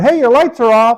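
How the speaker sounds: loud yell. Retelling calling out to a driver leaving a parking lot, retelling own yell. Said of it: "and I just yelled".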